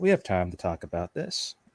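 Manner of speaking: gentle, soft-spoken, very soft, hushed tone. A character moves closer to her and speaks in a very soft tone. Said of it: "in a in a very soft tone".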